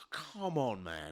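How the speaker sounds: mildly exasperated, fed-up, urging tone. Retelling what he said to someone at a door, mock-exasperated. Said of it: "I went like this, come on, man, like that. You know, a bit exasperated".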